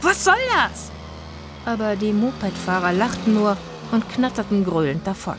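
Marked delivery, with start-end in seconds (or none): 0.0-0.9 crying out at very high pitch. After a moped rider grabs her hair, Zora calls out at the gang: crying out. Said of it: "schrie Zora auf".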